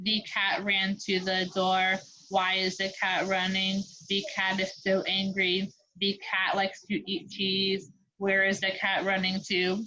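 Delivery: flat, expressionless, monotone robot voice. Speaker shows how a story sounds read without punctuation cues, in a flat robot voice. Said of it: "you're kind of in a robot voice".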